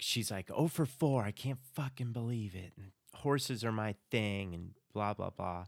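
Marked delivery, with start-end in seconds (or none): 0.5-4.5 whiny voice, higher. Retelling a contestant's complaint about going home: imitating Catherine whining. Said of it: "Catherine's gonna be a little bit more whiny".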